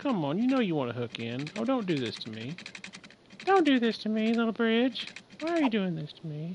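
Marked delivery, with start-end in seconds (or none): 3.4-6.6 high, squeaky, swooping, sing-song cartoon voice. Pleading with a little bridge that won't hook in, in a Mr. Hanky voice. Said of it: "I don't know why I sound like Mr".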